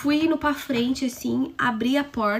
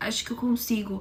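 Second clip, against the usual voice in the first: hushed, low, quiet delivery; 4 dB quieter than usual. Retelling Breno answering a question: imitating someone speaking quietly. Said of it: "tava falando baixo".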